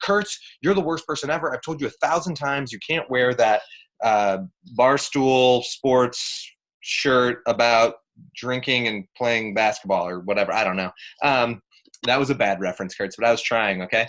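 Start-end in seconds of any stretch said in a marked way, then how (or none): none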